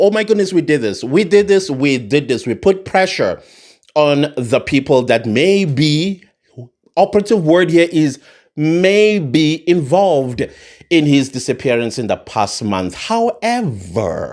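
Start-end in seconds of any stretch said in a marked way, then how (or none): none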